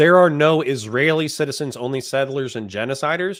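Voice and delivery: ordinary talk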